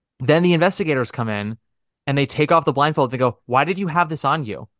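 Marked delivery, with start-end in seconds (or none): none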